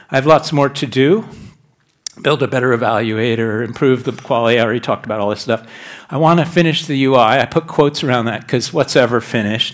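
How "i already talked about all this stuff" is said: rushed, fast speech. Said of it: "I'm talking fast 'cause I'm down to five minutes".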